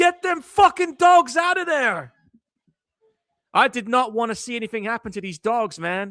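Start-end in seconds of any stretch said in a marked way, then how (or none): 0.0-2.1 very high, raised screaming. Retelling a scream at the movie screen: imitating own screaming at the screen. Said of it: "I was literally screaming at the screen going".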